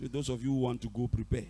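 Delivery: quick, low pressing voice. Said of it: "I don't know why I'm talking like this".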